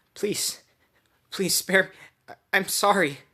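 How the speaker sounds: frightened, crying plea. Reading a story line where a character begs for mercy: terrified crying plea. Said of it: "she's terrified".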